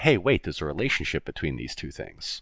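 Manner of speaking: ordinary delivery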